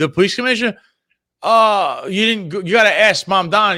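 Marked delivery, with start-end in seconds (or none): 1.4-3.8 play-acted, hedging, dodging evasive tone. Retelling how he avoids the question: imitating an evasive answer. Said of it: "he's not giving you an answer".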